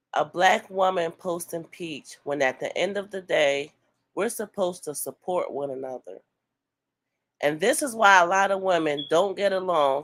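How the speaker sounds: ordinary talk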